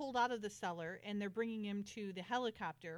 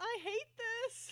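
put-on shrieked, fed-up outcry, high and shrill; 14 semitones higher than usual. Retelling a helicopter scene from the series: imitating a character yelling. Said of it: "And she yells".

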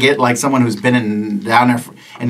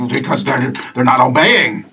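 cardinal bird character voice. Voicing a cardinal who answers the players: voicing a cardinal. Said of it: "He's like".

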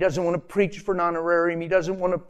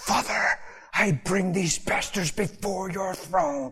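prayerful intercession voice; 3 dB quieter than usual. Retelling praying alone in the church nursery, the speaker uses their intercession prayer voice. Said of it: "in my intercession posture and voice".

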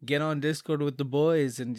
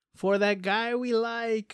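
really bad-sounding, high battle scream; 9 semitones higher than usual. Recalling a favorite video game line, the speaker performs it: Chivalry 2 character battle scream. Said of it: "one of the things your character screams is".

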